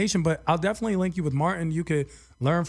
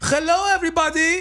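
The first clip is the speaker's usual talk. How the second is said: mock DJ voice, fake accent, higher, louder; 12 semitones higher, 5 dB louder than usual. Mocking how club DJs talk to the crowd: imitating a DJ's fake accent. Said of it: "they always fake like they have an accent".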